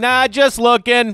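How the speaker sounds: mock very loud, very high taunting heckle. Retelling his answer in a dugout bit: imitating dugout trash talk. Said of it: "For the guy taking a pitch for a strike".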